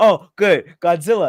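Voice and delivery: very loud, booming voice at full volume. Retelling a movie scene, voicing Kong greeting Godzilla: Kong voice. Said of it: "And Kong's like".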